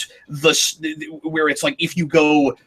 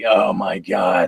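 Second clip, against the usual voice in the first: put-on whiny complaining voice; 8 semitones lower than usual. Showing how another speaker talks when complaining: imitating his complaining voice. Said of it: "he's like".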